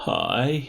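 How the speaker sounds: quite frightened, high-pitched little voice. Voicing a frightened groundskeeper greeting a team: frightened groundskeeper voice. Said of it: "quite frightened".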